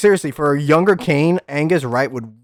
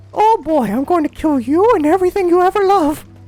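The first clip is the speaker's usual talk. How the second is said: very high, little cartoon mouse voice; 4 dB louder than usual. Imagining a war speech said in a Mickey Mouse voice. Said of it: "if he sounded like Mickey Mouse".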